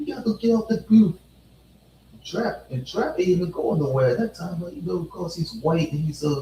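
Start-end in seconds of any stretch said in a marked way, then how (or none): 0.0-1.2 high-pitched, loud voice. Retelling what the manager said, in a Stewie Griffin voice.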